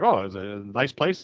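low, under-the-breath, throwaway mutter. Retelling a film scene, the speaker imitates Jeffrey muttering as he walks through. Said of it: "Jeffrey's just muttering".

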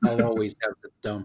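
put-on trapped, resigned tone. Mimicking how another speaker said a line: mimicking a trapped, resigned tone. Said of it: "You say it like a, a can't escape thing".

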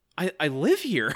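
acted-out stunned, innocent, bewildered disbelief. Imitating how a character delivered a line: imitating Al's stunned disbelief. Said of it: "As if he can't believe what he's seeing".

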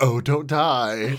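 patronising, condescending, talking-down brush-off tone. Retelling how he answered her saying she wanted to die: mock-condescending. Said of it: "he condescendingly goes".

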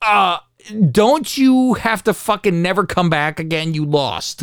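plain

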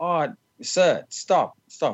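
high, drawn-out put-on English accent. Retelling a baggage handler stopping him on the tarmac, in an english accent. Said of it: "In his English accent".

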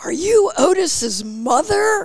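mock very high, drawn-out shout. Retelling a guy in a parking lot calling out: imitating a man yelling. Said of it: "this guy sort of yells at me and goes".

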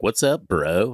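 put-on cheesy California accent. Speaker imagines Australian listeners calling in; cheesy California accent. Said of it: "your cheesiest California accent".

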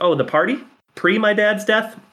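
very dry sarcastic delivery. Quoting a movie character's line about the party: imitating Linda Harlan's dry sarcasm. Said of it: "a very dry, sarcastic delivery".

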